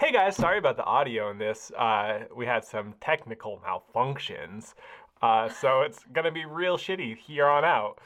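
sounds like a cartoon character, cartoonish voice. Recording a podcast intro, speaking in a cartoon voice. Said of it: "You sound like a cartoon".

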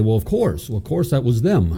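plain

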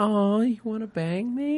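sweet, innocent, high, soft cooing voice.

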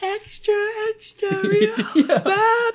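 hushed newspaper hawker voice. Acting out a newspaper seller trying to stay quiet: whispering newsboy call. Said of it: "He's trying to whisper".

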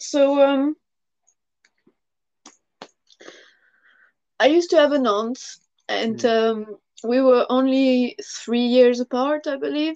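holding back emotion. Beginning to talk about a niece, trying to compose themselves, choked up. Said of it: "I'm going to try to compose myself".

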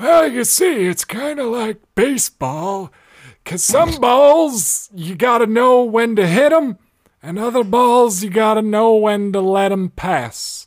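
put-on very high, crusty old man voice. Giving advice, switching into a put-on old man voice: crusty old man voice. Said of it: "Let me get my old man voice for this".

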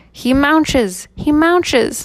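thin, high pixie-like voice. Reading a story aloud, the narrator voices the pixie Radish in her thin, high voice. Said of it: "said in her thin, high voice".

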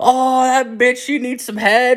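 very high, tearful laughing fit. Recalling laughing in tears with a girlfriend at a serial killer, retelling a laughing fit. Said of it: "just fucking laughing".

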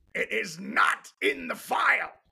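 put-on restrained yell. Quoting a favorite line from Exorcist 3 to another speaker, loud George C. Scott impression. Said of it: "I have to do it loud because that's the way he does it".

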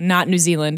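ordinary talk

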